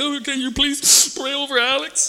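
play-acted very high, sob-broken pleading. Retelling asking a woman to pray over Alex, imitating broken crying. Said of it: "it's that broken crying".

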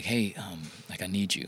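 put-on whisper. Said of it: "I just heard the whisper".

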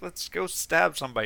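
put-on high, excited little crab voice. Describing a game's crab hero with a two-prong fork: put-on excited crab voice. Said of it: "and he's all excited".

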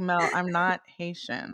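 plain

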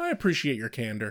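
acted, very nonchalant, offhand, unbothered tone. Retelling a scene where Angel answers a demon: nonchalant Angel line. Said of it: "Angel's just very nonchalantly".

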